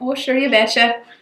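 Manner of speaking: put-on Minnesota accent. Speaker shows off the one accent they can kind of do, Minnesota accent. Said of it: "I can just say anything with A in it with a Minnesota accent".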